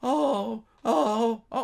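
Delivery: mock whimpering, high-pitched and loud.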